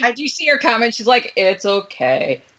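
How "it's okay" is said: low, slow, mopey drawl. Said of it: "In her best Eeyore voice".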